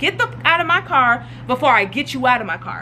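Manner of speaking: ordinary talk, nothing marked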